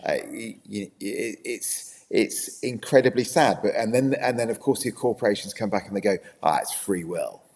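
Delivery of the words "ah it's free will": put-on corporate spokesman voice with American accent. Imitating the corporations' reply: imitating corporations in an American accent. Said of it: "I don't know why I said that in an American accent".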